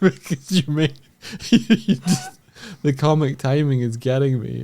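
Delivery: laughing mid-sentence, talking through laughter. Explaining why the other speaker's comic timing is funny, laughing while talking. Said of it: "I'm tearing up from laughter over here".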